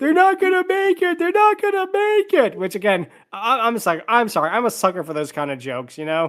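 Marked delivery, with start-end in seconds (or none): 0.0-2.6 put-on very high-pitched, loud screaming. Retelling a ride character's line from moments earlier: imitating a scream. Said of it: "he was screaming".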